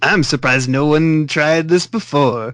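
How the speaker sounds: put-on vampire accent. Narrating a story and voicing the character Balak, in Balak's vampire accent. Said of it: "it's totally vampire accent".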